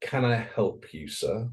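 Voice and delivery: really condescending, patronising, polite tone. Retelling how a man from the showroom greeted Mike, mock-condescending tone. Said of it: "in a really condescending tone".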